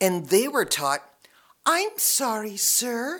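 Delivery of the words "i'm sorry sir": soothing, small, high-pitched, placating peacemaker voice. Recalling how FedEx staff were taught to greet upset customers: mock placating little high voice. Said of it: "that little high peacemaking voice".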